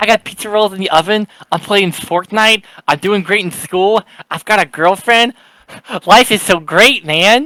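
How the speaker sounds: mock high, overjoyed, thrilled kid voice. Teasing another speaker by imitating a kid having the greatest day ever. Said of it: "having, like, the greatest day ever. He's like".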